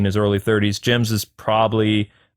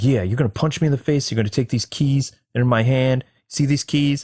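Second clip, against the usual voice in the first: put-on whispering cop voice, higher pitch; 3 semitones higher than usual. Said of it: "he's kinda whispering".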